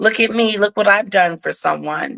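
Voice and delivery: plain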